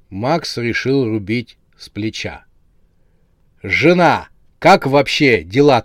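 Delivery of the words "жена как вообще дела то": gleeful, cheerful, loud barked shout. Max, deciding to speak bluntly, asks his wife how things are with a cheerful bark. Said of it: "радостно гаркнул он".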